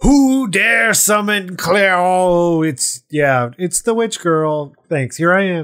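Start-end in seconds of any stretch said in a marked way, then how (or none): 0.0-2.6 put-on terrifying demon voice, higher, slower. Describing a summoned demon's entrance, in a fake terrifying demon voice. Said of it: "trying to be like terrifying demon creature".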